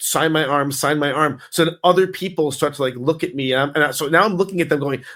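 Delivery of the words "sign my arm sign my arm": plain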